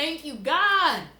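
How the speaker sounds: speaking through tears. Retelling own words while crying at a bar: retelling own crying praise. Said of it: "crying, like, praising God".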